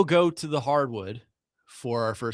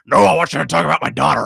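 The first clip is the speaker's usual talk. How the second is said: loud, rough-edged, rasping voice pushed out; 7 dB louder than usual. Retelling how he wanted to talk about Paul and Brock and got refused, in a Vince McMahon voice. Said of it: "in the Vince voice".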